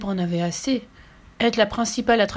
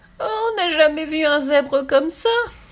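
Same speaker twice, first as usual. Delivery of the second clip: spluttering, high giggling with snorting bursts of held-in laughter; 7 semitones higher, 4 dB louder than usual. The panther, rolling on the ground at Little Zebra, bursting out giggling. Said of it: "pouffa la panthère en se roulant par terre".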